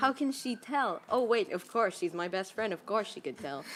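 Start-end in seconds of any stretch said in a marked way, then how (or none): none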